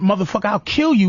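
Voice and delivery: mock furious anger. Acting out the kind of anger she does not have: imitating someone furious.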